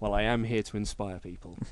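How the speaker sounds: put-on dry, expressionless deadpan, low and quiet. Retell your favourite thing about this, the wrestler's reply to Kevin Owens's flattery, imitating a deadpan Baron Corbin. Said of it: "Corbin deadpan was like".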